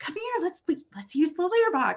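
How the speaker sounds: upbeat, encouraging, high, sing-song coaxing tone. Demonstrating how to call a cat to the litter box, positive encouraging tone. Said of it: "using positive reinforcement and even just tone of voice".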